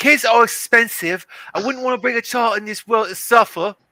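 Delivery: bad fake London accent, very high, very loud, shrill. Reading a london woman's quote aloud, second try after sounding too masculine: shitty english london accent. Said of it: "do a, uh, a shitty English accent since she's supposed to be from London".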